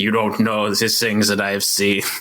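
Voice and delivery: over-the-top, hammed-up French accent. Suggesting how the other speaker should talk, the speaker demonstrates an overblown French accent. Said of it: "overblown French accent".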